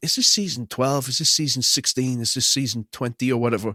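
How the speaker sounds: ordinary talk, nothing marked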